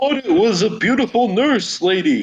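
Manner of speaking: put-on wealthy rich-person voice. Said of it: "that's your rich person voice".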